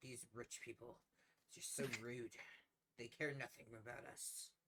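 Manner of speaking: muttered grumble under the breath, half to himself. Narrating the scene, voicing the man the papers were shoved at, muttering under his breath. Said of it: "hear him mutter under his breath".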